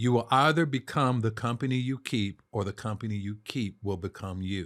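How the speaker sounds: slow, measured, deliberate delivery, each word placed. Repeating a saying because it came out too fast the first time, saying it slower. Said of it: "I'll say that slower".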